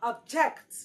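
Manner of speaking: object stressed on second syllable, ob-JECT. English lesson explaining object as a verb: second-syllable stress on object. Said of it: "the stress must fall on the second syllable because it is a verb".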